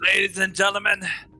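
shouting. Starting a monologue, the character stands up and yells to the crowd. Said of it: "stand up and yell at the crowd".

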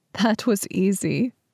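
light, playful teasing tone. Reading a story aloud, the narrator voices a woman teasing a man. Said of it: "she teased".

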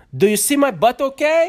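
very high, very loud, shrill, self-absorbed squeal. Guessing what Pao will say posing for a calendar: Pao impersonation. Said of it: "That is your Pao impersonation?".

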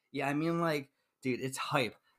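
ordinary delivery

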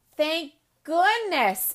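bright, cheery delivery. Emma replies to Chloe while placing a crown of flowers on her head: cheerful. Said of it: "Emma said cheerfully".

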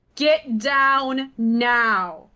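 commanding, barking motherly voice. A player declares their character's command to an enemy, in a mom voice. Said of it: "Mom voice".

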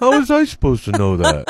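loud, belting, swooping sitcom-style character voice. Doing an impression on request: Joey from Friends voice. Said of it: "Joey from Friends".

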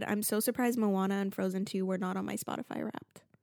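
ordinary talk, nothing marked

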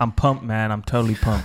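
put-on American accent. Told to imagine he's american, the host redoes his show intro: fake american accent. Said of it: "Imagine you're American".

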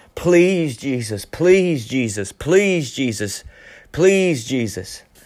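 pleading cry, crying out over and over. Retelling a meeting, the speaker voices a lady in the service: imitating a lady crying out. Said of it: "this lady was crying out in the service".

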